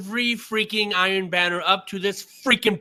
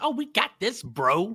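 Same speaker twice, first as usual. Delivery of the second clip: put-on very slow, try-hard cool-kid drawl; 2 semitones higher, 4 dB quieter than usual. Mocking another player's slang, imitating him trying to sound cool. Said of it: "now you're trying to sound like the cool kids".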